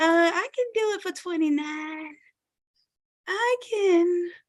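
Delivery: voice going soft and high. Speaker acts out a seller backtracking on a shirt price, voice going all soft. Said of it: "your voice get all soft".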